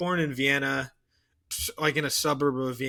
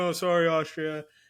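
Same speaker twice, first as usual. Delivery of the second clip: mock sobbing with crocodile tears, fake tearful voice; 3 semitones higher than usual. Retelling how Tsar Nicholas reacted to the murder: mock crocodile tears. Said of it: "faking it and doing crocodile tears".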